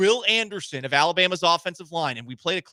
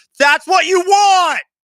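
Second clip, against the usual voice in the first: very loud, very high, shrill yell; 13 semitones higher, 12 dB louder than usual. Speaker defends a general manager's low ball offers: yelling. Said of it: "Excuse me for yelling".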